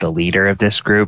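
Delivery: ordinary delivery, nothing marked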